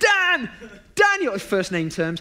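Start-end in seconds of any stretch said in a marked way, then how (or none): 0.0-1.3 put-on shout, higher and louder. Retelling how a man shouted after a stranger walking away: imitating someone shouting. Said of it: "He stands up and he shouts".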